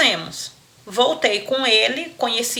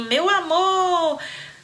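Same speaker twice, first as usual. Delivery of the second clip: mock adoring high shout, amor held long; 7 semitones higher than usual. Retelling how he arrived at the meeting: imitating him shouting. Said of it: "Ele chegou me gritando assim".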